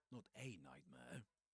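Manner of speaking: heavy, hard stress on the word a. Reading a line where the italicized word is meant to be stressed, stress on 'a'. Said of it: "the word is meant to be accented, is meant to be stressed".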